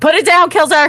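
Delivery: loud, shrill scream, pitched way up. Screaming from the shore at a companion holding cannonballs: screaming. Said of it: "I'm screaming at him".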